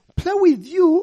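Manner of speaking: very high, disbelieving, incredulous, pitch shooting up. The narrator answering a girl who invites him to play, incredulous. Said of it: "I said incredulously".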